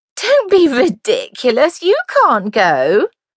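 unkind, mocking laugh through words, high, swooping. A girl holds another girl's ball invitation out of reach, laughing unkindly. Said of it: "Gertsy laughed unkindly".

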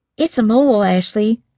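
whispering. Reading a story aloud, narrator gives a character's line, whispered. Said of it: "she whispered".

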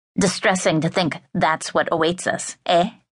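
malicious, smiling voice with a twisted smile. Reading a stranger pressing a silent woman beside her, with a malicious smile. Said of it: "A twisted, malicious smile".

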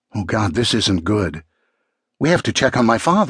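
plain

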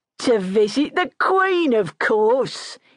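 words cut through with a cackle. Narrator reading a man's answer to a question in the wagon: cackling. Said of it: "he cackled".

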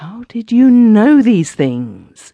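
high, loud horrified gasp. A woman speaks to the narrator after staring in horrified silence; gasping. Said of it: "she gasped".

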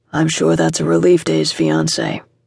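flat, deep delivery. A man speaking from behind a woman who just mentioned his brother, flat, deep voice. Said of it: "said a flat, deep voice".

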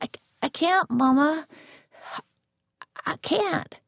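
frightened, high, stumbling plea, climbing upward. Told to answer the door, the narrator pleads with mama: scared, voice climbing higher. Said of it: "My voice climbing higher".

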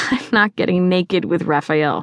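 ordinary delivery

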